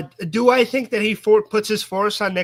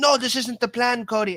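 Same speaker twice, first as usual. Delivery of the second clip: terrible put-on British accent; 4 semitones higher than usual. Act out Nick Aldis answering Cody, who wants a match, in a terrible British Nick Aldis impression. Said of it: "with a terrible British accent".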